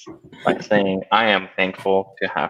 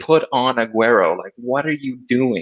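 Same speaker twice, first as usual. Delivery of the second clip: toned-down, mild yelling; 4 semitones higher than usual. Retelling watching the World Cup, yelling at the coach: imitating own screaming at TV. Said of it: "I was screaming at the T V at the coach".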